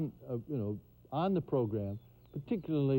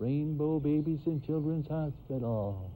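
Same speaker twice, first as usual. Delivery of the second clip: tiny, small little voice. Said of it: "a little voice".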